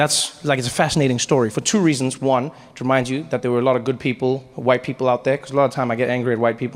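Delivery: ordinary talk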